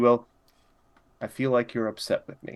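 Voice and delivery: private, intimate, confiding tone. Voicing a character speaking so others can't overhear: quiet voice. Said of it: "in a quiet voice".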